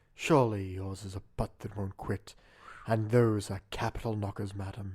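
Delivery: low, sultry, seductive come-hither voice. The others ask the speaker to say it again, sexy voice. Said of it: "give it to us in your sexy voice".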